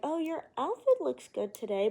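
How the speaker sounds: high, swooping, very sarcastic tone, acted out. Describing how bullies mock someone, imitating a sarcastic compliment. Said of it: "in the most sarcastic, tone ever".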